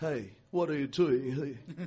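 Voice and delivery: low, put-on schoolyard kid voice. Contrasting how children talk at home and at school, imitating a child's school voice. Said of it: "That's another voice for the school".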